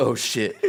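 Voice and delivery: put-on quiet muttering under the breath. Retelling a coworker's reaction to a deadline reminder: imitating muttering under breath. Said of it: "uttered under his breath".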